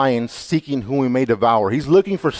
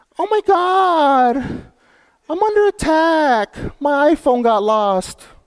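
put-on very high girlish voice; 14 semitones higher than usual.

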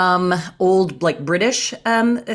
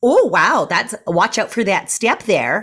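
crazy put-on Midwestern Canadian accent; 2 semitones higher than usual. Retelling what the speaker blurted after tripping into a scene, generic Midwestern-Canadian accent. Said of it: "I put on this like crazy voice".

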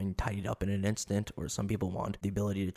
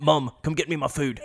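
very loud, booming, put-on British smoker voice; 7 semitones higher, 9 dB louder than usual. Imitating how someone sounds in his other personality: British smoker voice. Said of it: "I think he's like a British smoker".

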